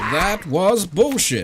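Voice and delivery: high-pitched, grating, annoying put-on American accent. Imitating a desk button that plays a phrase, in an annoying American accent. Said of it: "in an annoying American accent".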